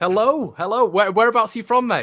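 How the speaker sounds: high, loud, eager, cheerful voice.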